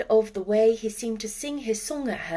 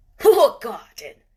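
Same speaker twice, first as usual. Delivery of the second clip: rough-voiced and very loud; 10 dB louder than usual. A narrator reads a man's question, asked while he is digging, in a rough voice. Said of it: "he said in a rough voice".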